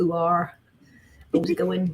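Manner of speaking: thick, broad rural West Country accent, pirate-like. Describing regional accents, saying a sound in a thick West Country accent. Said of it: "a very thick West Country accent, which is a little bit more like a, a pirate".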